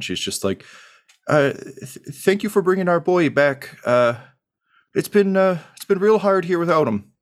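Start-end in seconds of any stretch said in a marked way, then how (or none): 1.3-7.0 very high, tearful, halting voice, crying while speaking. Voicing a mother hugging the one who brought her son back: tearful, crying while speaking. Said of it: "she's crying again".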